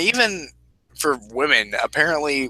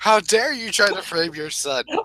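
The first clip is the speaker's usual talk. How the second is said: mock full-on yelling, high and pitched-up; 7 semitones higher than usual. Retelling how she sat there yelling at the speaker's dad, retelling a yell at dad. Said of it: "started yelling at my dad".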